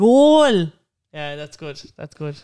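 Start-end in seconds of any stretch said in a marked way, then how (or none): 0.0-0.7 high, loud north side Dublin accent. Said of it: "Any name in a north side accent".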